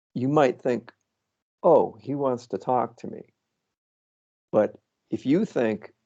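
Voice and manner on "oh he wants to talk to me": normal talking voice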